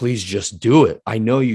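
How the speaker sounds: put-on sincere, earnest, heartfelt pleading. Recalling asking for something in faith, retelling an earnest plea. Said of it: "like really actually pleading".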